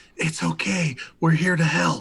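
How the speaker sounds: whispering softly. Player whispers into the fox's ear while picking it up: whispering. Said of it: "I'm going to whisper into the ear".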